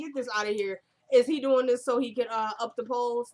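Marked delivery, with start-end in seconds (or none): none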